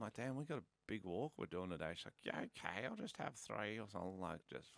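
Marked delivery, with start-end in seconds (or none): 2.2-4.2 put-on American accent on every word. Quoting what she said at breakfast, in an American accent. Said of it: "but in the American accent".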